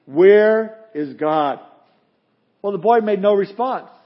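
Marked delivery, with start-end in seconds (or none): 0.1-1.6 stern, severe, pointed, no-nonsense tone. Telling a joke, acting a pastor questioning a boy: stern question. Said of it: "asked him sternly".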